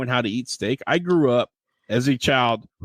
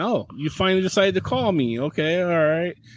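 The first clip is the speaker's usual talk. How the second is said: high, offhand, unimpressed dismissive tone; 6 semitones higher than usual. Retelling a phone call from a date: imitating a dismissive date. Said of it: "very dismissive".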